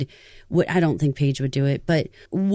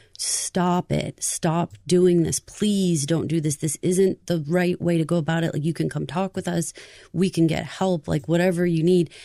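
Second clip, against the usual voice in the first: mock tearful, crying pleading voice. Retelling a principal's announcement to the students: imitating a crying plea. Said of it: "he was pleading with us as kids".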